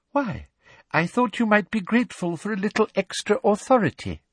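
poisonously sweet voice, pitched very high. One professor answers another, still smiling, with a sickly smile. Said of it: "still smiling her sickly smile".

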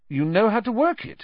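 very high, suspicious, distrustful tone. A boy questions a man who tracked them with a map, suspiciously. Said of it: "Harry said suspiciously".

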